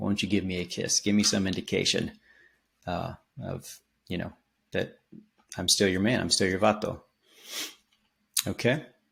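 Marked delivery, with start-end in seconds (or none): none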